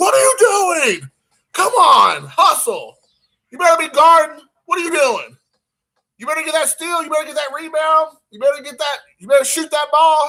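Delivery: mock very high, loud, carrying yelling. A parent retelling how he yells at his son during games, retelling yelling at his son. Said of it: "when he's like yelling at me".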